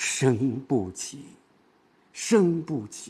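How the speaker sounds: light, unstressed, slow and soft delivery.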